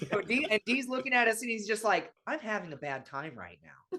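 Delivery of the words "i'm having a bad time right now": put-on breezy, happy-go-lucky, soft, calm sing-song voice. Retelling what someone said in the crowd: imitating a calm, collected remark. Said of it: "he's so calm and collected".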